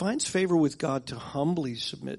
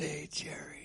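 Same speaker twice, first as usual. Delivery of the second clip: tough-guy mafia voice, much quieter; 2 semitones higher, 10 dB quieter than usual. Quoting a man from an italian background greeting him by name, mafia voice. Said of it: "he had that mafia voice".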